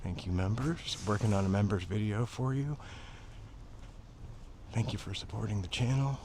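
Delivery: low, hushed, very quiet half-whisper. Thanking channel members on stream, the speaker is half-whispering. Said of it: "I don't know why I'm whispering".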